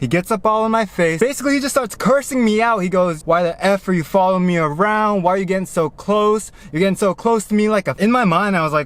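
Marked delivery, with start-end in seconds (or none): none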